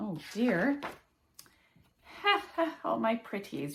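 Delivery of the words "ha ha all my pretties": wicked, delighted, gleeful cackling witch voice. Narrator reading a rhyming story voices the witch, cackling witch voice. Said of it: "she cackled in glee".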